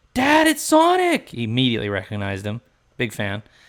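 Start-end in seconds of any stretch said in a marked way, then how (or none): 0.2-1.3 put-on high, loud, slow excited little boy cry. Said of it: "my son goes".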